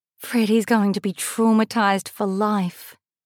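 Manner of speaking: ordinary delivery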